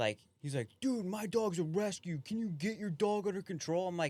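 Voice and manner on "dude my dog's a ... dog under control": put-on high, irate yell, losing it. Retelling a dog walker who lost his mind at him: imitating a man yelling. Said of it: "He's yelling at you".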